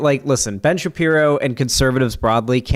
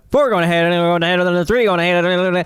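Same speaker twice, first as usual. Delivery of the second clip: fast race-caller announcer patter, much higher; 6 semitones higher than usual. Speaker demonstrates the guy with the microphone at dog tracks, fast dog-track announcer talk. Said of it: "where you got to talk really fast like that".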